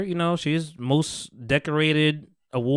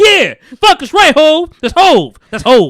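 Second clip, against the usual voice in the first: very loud, shrill, high-pitched swooping holler; 12 semitones higher, 14 dB louder than usual. Retelling yelling at a show in front of a girlfriend: retelling own yelling. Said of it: "I'm yelling".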